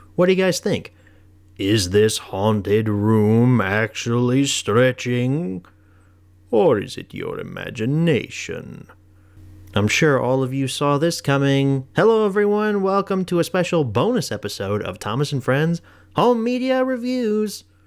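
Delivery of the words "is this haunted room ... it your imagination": slow, drawn-out, spooky, theatrical narration voice. A video host tries out an impression for viewers: Haunted Mansion Ghost Host impression. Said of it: "my Haunted Mansion ghost host uh, impression".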